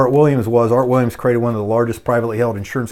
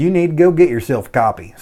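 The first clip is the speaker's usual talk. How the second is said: put-on southern Kentucky accent, higher-pitched; 4 semitones higher than usual. Retelling what Paul said about a book: Paul's southern Danville Kentucky accent. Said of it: "in his, uh, southern, uh, you know, Danville, Kentucky accent".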